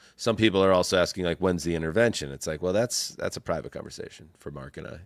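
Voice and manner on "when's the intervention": plain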